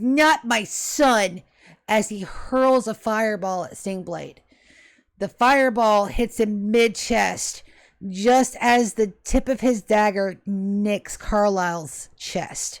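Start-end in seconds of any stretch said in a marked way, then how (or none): 0.0-1.4 full-throated, all-out scream. Voicing a father attacking his son's attacker: screaming.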